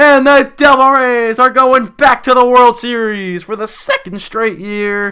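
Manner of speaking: very loud, very high voice cracking and breaking. Calling the final strike of a baseball game, voice cracking. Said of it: "that was a really bad voice crack".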